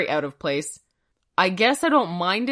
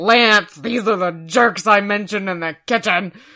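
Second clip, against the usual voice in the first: put-on drunken slur, louder; 5 dB louder than usual. Retelling a favorite funny scene, imitating Drunk Bob's slurring. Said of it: "he's just slurring his words".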